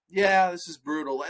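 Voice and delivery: mock flat, unconvincing delivery. Mocking a flat reaction to a brother being beaten: imitating flat, unconvincing reaction. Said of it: "sell it".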